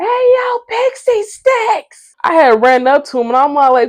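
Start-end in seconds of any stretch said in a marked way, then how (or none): 0.0-2.2 put-on very slow, very high, drawn-out drunk yelling. Retelling greeting a friend in the street while drunk: imitating own drunk yelling. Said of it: "I'm out in the street yelling".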